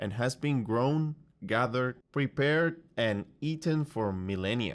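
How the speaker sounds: list intonation, rising on each item, falling at end. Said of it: "all have upwards intonation to show he's giving a list".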